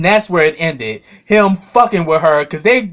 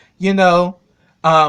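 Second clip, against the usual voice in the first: ordinary talk, nothing marked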